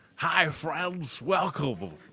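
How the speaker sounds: fake radio and TV presenter announcer delivery. Showing what a put-on tv voice sounds like: put-on announcer voice. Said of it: "I don't have one of those voices like this".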